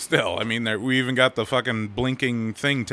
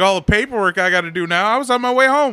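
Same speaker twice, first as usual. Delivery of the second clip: put-on very high, loud, put-upon southern good-old-boy cop voice; 10 semitones higher, 7 dB louder than usual. Retelling what a cop in the south said after a stop: imitating a good old boy cop. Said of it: "He's like".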